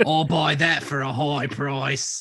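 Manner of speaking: put-on smarmy English accent. Riffing on a game quote, in a smarmy English accent from Resident Evil 4. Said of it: "that's the best smarmy friggin' English accent ever".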